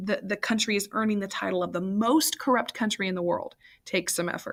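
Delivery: ordinary delivery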